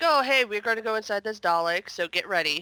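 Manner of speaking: usual speaking voice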